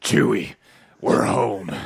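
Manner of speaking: put-on, strained action-hero voice. Trying a Duke Nukem voice that comes out as constipated Han Solo voice. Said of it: "I thought you were constipated Han Solo".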